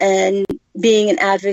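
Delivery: ordinary delivery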